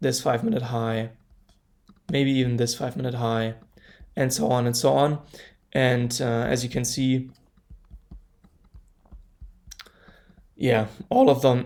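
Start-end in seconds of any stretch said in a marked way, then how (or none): 11.1-11.7 voice cracking mid-phrase, breaking on a word. Walking through yesterday's trades on a chart, voice cracking. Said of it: "that was a voice crack".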